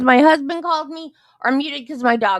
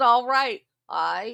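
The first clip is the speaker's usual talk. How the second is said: put-on Southern accent with a twang on all right; 2 semitones lower, 4 dB quieter than usual. Imitating how Rudolph says "all right": imitating Rudolph's Southern-style "I". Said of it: "That's what Rudolph does when he says".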